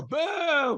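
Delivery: high, mock booing yell like a heckler.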